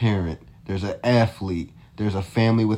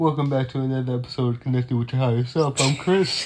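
words pushed out while yawning; 4 semitones higher than usual. A host welcomes listeners back to another episode, yawning while talking. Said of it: "I was yawning".

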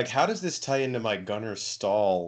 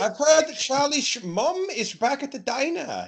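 put-on German accent, higher and slower; 7 dB louder than usual. Doing an impression of a character in a retelling to a friend, speaking as him, in a put-on german accent. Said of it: "He's German in this impression".

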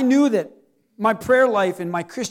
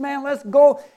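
put-on enthusiastic eager tone, higher pitch; 5 semitones higher, 3 dB louder than usual. Retelling own past eager words as a churchgoer, imitating own past enthusiasm. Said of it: "I was one of those very enthusiastic Christians".

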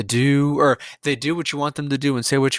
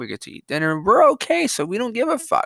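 facetious, sing-song, pitched-up, tongue-in-cheek delivery; 9 semitones higher than usual. Speaker describing a mindset, being facetious. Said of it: "I'm being facetious".

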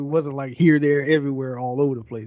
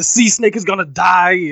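mock sudden blurted outburst, higher and louder; 5 semitones higher, 9 dB louder than usual. Recapping a scene from a show, the speaker is retelling a character's sudden outburst. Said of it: "he just kind of bursts out with".

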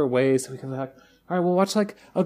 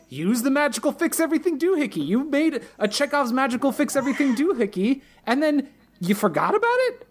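put-on very high-pitched screaming yell; 10 semitones higher than usual. Retelling how two viewers reacted to a show's scene, screaming at the TV. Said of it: "both screaming at the TV going".

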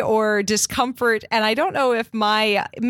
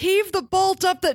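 high, bossy, abrupt barked yell; 9 semitones higher than usual. Recounting what a woman told her partner, imitating a yelled instruction. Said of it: "kind of a yelling and instruction".

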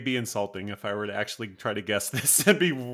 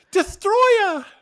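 shrill, very high, very loud belted yell; 10 dB louder than usual. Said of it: "my brilliant impression of [name]".

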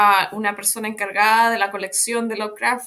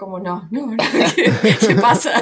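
loud, drawn-out, mortified, deeply embarrassed tone; 4 dB louder than usual. Recounting Eduardo kneeling before a crowd, she acts out being mortified. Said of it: "muerta de vergüenza".

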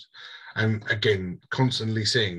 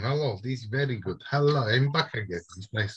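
put-on, self-made Russian accent; 4 semitones higher than usual. Voicing a character in a role-play session, Russian accent. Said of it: "This Russian accent".

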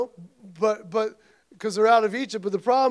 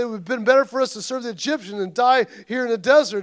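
ordinary talk

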